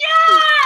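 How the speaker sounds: excited, very high-pitched, loud cheer.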